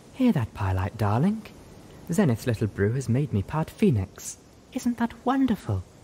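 doting, affectionate cooing. Velvet Remedy, ignoring the others, speaks to Pylight, cooing. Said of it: "instead cooing at Pylight".

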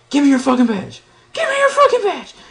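shrill scream, angry, pitch swinging wildly up and down. Speaker retells a friend screaming at the guy with handcuffs: retelling Cartman-like scream. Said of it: "screaming in the funny".

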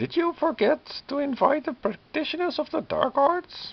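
cackling villain voice. Narrator reading the necromancer Biala's taunt as she walks toward the church, cackling. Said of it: "Biala cackles".

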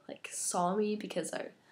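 sick, sore-throat, whispery, barely voiced. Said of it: "It kinda hurts to talk".

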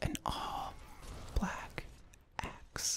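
very soft, slow, drawn-out, hushed ASMR whisper. Describing an in-game axe, saying the phrase again ASMR style. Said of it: "Let me just say it ASMR right now".

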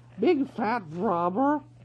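weasel voice. Reading a story, Nuff quickly calls out to the quarreling weasels: passable weasel voice imitation. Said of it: "called out in a passable weasel voice".

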